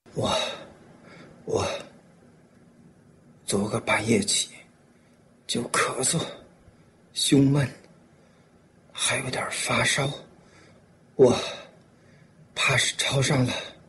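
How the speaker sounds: listless, feeble delivery with no strength behind it. Zhigang answers his fiancée, who asks what is wrong; weak, feeble voice. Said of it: "说话有气无力的".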